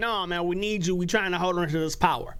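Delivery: ordinary talk, nothing marked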